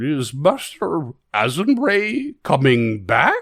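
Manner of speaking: tiny, warbling, swooping bird voice. Narrator voicing a tiny bird-shaped construct in a ruined shop, warbling bird-construct voice. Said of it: "you hear a warbling voice".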